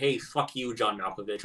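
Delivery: normal talking voice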